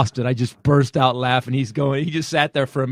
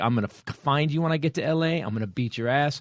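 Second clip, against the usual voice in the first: put-on angry, threatening voice, quieter; 5 dB quieter than usual. Retelling a prank caller getting threatening and pissed: imitating a threatening caller. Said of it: "Willie's getting threatening".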